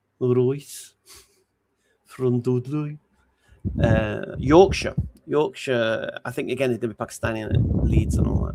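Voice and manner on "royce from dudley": put-on Brummie Birmingham accent. Speaker giving their best attempt at a Birmingham accent. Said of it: "Do my best Birmingham accent".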